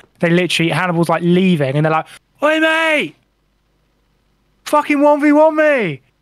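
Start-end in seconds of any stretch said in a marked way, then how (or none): 2.4-6.0 put-on high, very slow, drawn-out shout. Retelling two generals challenging a departing enemy: imitating generals shouting. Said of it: "they shout".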